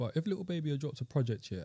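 ordinary talk, nothing marked

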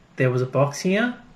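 usual speaking voice

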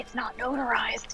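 quiet muttered aside. Voicing Alistair's aside during the scene: Alistair muttering under breath. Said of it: "under his breath".

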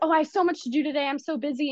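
high, frantic, overloaded, busy-mother voice. Describing how their mom talks when she is busy, imitating a frantic busy mom. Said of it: "she's like in her little frantic mode".

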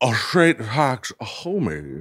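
very slow, drawn-out newscaster delivery. Remembering to do a voice for a catchphrase: Tom Brokaw voice. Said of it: "I forgot I got to do a voice. ... that is Tom Brokaw".

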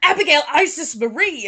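mock angry mother voice, loud and shrill. Retelling calling her daughter's full name in a supermarket, the speaker does a mock-angry mother voice. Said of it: "In my angry mother".

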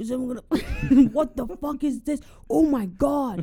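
high, loud shocked voice. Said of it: "someone in the back being like".

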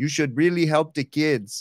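put-on Mexican accent. Describing an infomercial starring Yamo, the speaker imitates Yamo's Mexican accent. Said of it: "in his Mexican accent".

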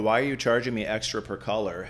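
ordinary talk, nothing marked

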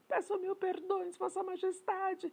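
very high-pitched shouted cry. A disgraced witch pleading with Her Majesty, shouting. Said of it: "gritou a bruxa que tinha caído em desgraça".

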